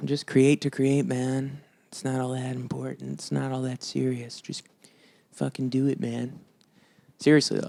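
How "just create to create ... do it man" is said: laid-back, chilled-out hippie voice. Talking about just creating music, in a hippie voice. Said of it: "I just made a hippie voice".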